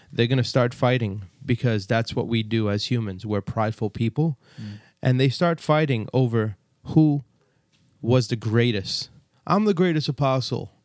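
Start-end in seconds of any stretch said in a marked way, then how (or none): 9.5-10.7 proud, self-important, boastful bragging tone. Retelling how the apostles fought over who was greatest, mock-boastful apostle impression. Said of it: "That's a good impression".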